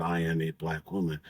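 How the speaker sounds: plain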